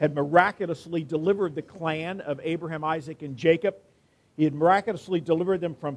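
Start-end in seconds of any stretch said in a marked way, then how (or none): none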